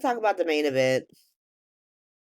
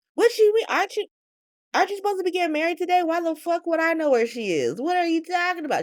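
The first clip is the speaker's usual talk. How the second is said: very high, fast giddy shrieking squeal. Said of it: "She's like".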